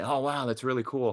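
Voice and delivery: put-on upper-class English accent. Retelling Jude's remark while others checked out the suit, posh English voice as Jude. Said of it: "I hear this posh English voice say".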